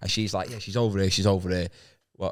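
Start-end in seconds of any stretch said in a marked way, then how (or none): none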